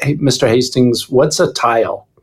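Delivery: plain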